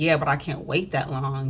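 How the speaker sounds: normal talking voice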